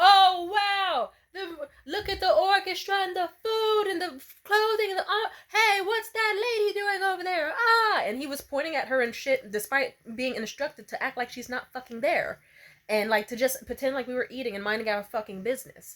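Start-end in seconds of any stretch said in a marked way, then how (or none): 0.0-8.0 very high, loud, drawn-out acted shout. Retelling how the old man extra started shouting during takes: imitating someone shouting. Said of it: "'cause then he started shouting".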